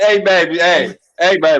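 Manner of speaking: mock-drunk, slightly tipsy, coaxing sweet-talk. Acting out him coming in late to someone asleep, acting a little drunk. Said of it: "he came in a little drunk".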